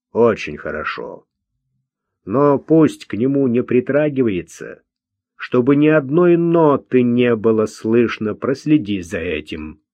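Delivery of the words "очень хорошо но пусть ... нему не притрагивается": usual speaking voice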